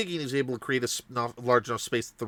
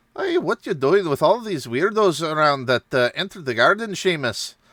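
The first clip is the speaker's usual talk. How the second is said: terrible fake Irish accent, pitched up; 5 semitones higher, 8 dB louder than usual. Retelling a game session, the speaker voices a character calling to seamus, terrible put-on accent. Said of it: "The uh, punishment of terrible accents".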